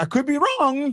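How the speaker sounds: voice cracking way up.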